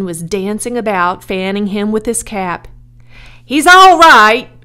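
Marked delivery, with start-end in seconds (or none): 3.4-4.4 high, very loud outcry. Asked what's wrong with his pig, the pig's owner answers, crying out. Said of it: "cried Mr. Zuckerman".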